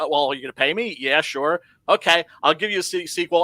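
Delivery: ordinary talk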